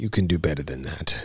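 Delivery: deep, low, quiet, very stern voice. Recounting a Kill Bill scene, the speaker acts out her line: putting on a deep stern voice. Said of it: "she drops down deeper, you know, and gets very stern".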